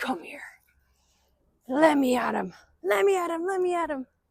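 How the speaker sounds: angry pet voice. Voicing a pet who wants to get at another cat: voicing Bailey, pissed off. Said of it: "Bailey's all pissed off. He's like".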